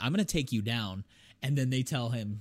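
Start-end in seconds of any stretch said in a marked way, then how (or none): none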